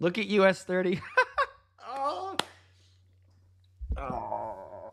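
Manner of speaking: laughing with excitement while talking. Watching index charts move during a live stream, laughing while talking. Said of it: "I'm sorry I'm laughing and I'm excited".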